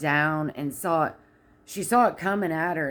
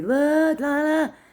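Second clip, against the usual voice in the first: mock, shrill, very high screaming; 11 semitones higher, 5 dB louder than usual. Retelling how a restaurant worker reacted to a big tip: imitating someone screaming. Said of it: "the one lady was screaming at everybody".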